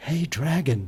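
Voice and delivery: barely-there, very soft half-whisper. Speaking to a sleeping dragon, she half-whispers very softly. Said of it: "Elizabeth whispered very softly".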